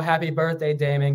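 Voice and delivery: ordinary talk, nothing marked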